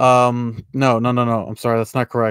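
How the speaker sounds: plain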